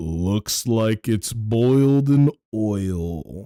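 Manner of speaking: incredibly deep voice. Retelling what a guy said about the punishment, in an incredibly deep voice. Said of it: "with an incredibly deep ass voice".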